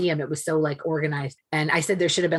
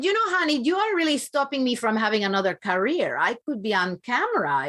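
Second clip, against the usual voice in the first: teasing, kidding, high, animated mother's voice; 7 semitones higher than usual. Retelling what the mother said to the speaker, imitating mother's voice. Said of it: "she said".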